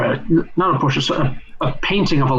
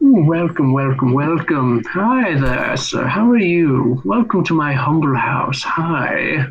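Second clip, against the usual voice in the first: gushing, hospitable, welcoming host's tone. Voicing a gleaming, smiling man who greets the party: smiling welcoming man. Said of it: "a smiling man ... spreads his arms and says".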